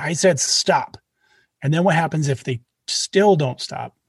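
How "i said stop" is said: slightly raised voice, much slower. Coaching kids on telling someone to stop, speaker demonstrates a slightly raised voice. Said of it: "raise your voice a little bit".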